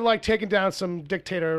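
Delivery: ordinary delivery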